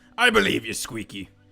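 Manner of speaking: low put-on voice drifting into pirate. Playing a character who tells Squeaky he believes him, pirate voice. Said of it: "now it's sort of becoming a pirate voice".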